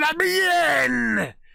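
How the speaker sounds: shrieking, raw, very high, rough monster roar. Voicing a smoke monster rushing at a player: roaring scream. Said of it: "with a roar, it screams at you".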